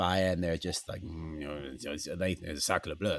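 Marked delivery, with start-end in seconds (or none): 1.0-3.2 low, soft mumble under the breath. Retelling what old ladies in France say as he passes: imitating mumbling under breath. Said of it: "they're mumbling, mumbling under their breath".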